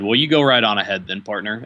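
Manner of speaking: mock, thickly laid-on, very sarcastic tone. Recounting a man's reply when the speaker insisted on getting to a seat, imitating a sarcastic remark. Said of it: "in a very sarcastic way".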